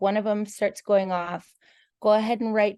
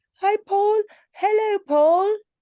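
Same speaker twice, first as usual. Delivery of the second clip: very high, loud, poor put-on British accent; 12 semitones higher, 5 dB louder than usual. Greeting paul while trying out a bad british accent. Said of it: "That's that's my British".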